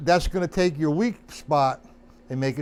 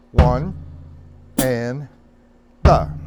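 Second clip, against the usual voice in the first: counting very slowly; 5 semitones lower, 5 dB louder than usual. Showing a drum student how slow to count the triplet fill-ins: counting very slowly. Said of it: "That's slow".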